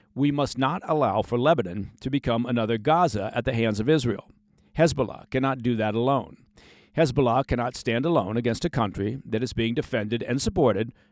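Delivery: ordinary talk, nothing marked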